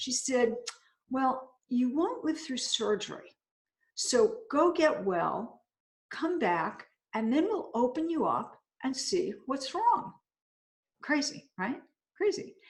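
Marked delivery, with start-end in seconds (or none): 1.1-10.1 calm, matter-of-fact, totally straight-faced delivery. Retelling what a department head doctor said: imitating a calm, straight-faced delivery. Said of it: "she said very calmly and with a straight face".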